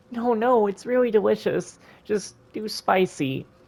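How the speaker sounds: high, slow tearful voice, talking through tears. Served food and asked why they're crying again, someone answers while crying. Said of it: "Why are you crying again".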